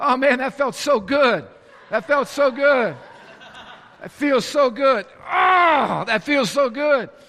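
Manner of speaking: high, slightly sarcastic, laid-on delivery. Retelling what one says after whacking a shin: imitating own sarcastic remark. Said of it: "I'm just being a little sarcastic".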